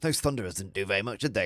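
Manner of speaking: put-on smug, gloating, taunting tone. Retelling a tabletop game, imitating the opponent: imitating a gloating opponent. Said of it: "He was gloating".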